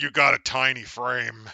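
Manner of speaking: hulking robot brute voice. Imagining a big monster robot prisoner talking to a newcomer: big Autobot monster guy voice. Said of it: "this big fucking Autobot monster guy going".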